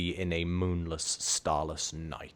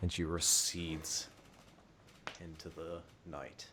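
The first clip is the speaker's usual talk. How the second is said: plain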